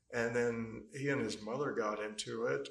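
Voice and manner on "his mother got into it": normal talking voice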